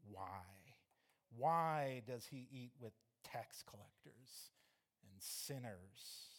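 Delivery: slow, mock-scornful, disdainful, contemptuous tone. Speaker acts out a group's scornful question, acting out a contemptuous question. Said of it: "You can almost hear the contempt in their voice".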